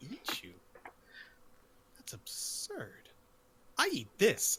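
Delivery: disgusted, revolted, breathy half-whisper. Voicing a character reacting to the others' fear of being eaten: disgusted. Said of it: "this disgusted look on his face".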